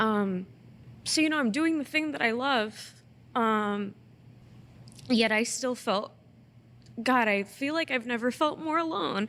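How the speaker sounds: tearful, crying, voice breaking. Speaker talking about a recent show, unexpectedly crying. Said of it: "sorry, I did not expect to cry".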